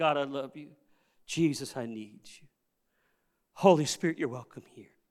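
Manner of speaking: hushed, softly spoken voice. Speaker showing how to praise god while walking around the house: quiet voice. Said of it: "in a quiet voice".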